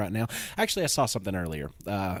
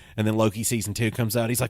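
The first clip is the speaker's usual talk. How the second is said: ordinary talk, nothing marked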